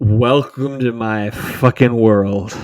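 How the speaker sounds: mock drunken slurred speech. Retelling a tour guide's closing statement, imitating slurred drunk speech. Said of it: "slurred, almost in slow motion".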